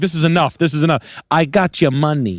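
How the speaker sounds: put-on Italian man accent. Retelling a line from the Irish guy on screen: imitating an Italian guy accent. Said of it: "talked like an Italian guy".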